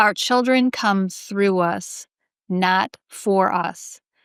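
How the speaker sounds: slow, deliberate, each word weighed and drawn out. Sharing a deep thought about children, said slowly. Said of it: "I'm gonna say it slowly".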